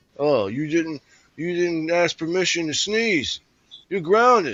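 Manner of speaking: scolding ogre voice. Retelling a man who scolded the speaker over trivial things, imitating his ogre voice. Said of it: "he would have be talking like this ogre".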